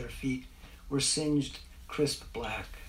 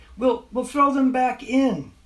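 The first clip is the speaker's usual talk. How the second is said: very high, raised, yelled voice; 12 semitones higher, 12 dB louder than usual. Dave calls out again to the children who left, yelling. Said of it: "he yelled again".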